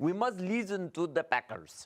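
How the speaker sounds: put-on Russian accent. Told to keep going and now add a russian accent, in a russian accent. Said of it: "Now incorporate a Russian accent".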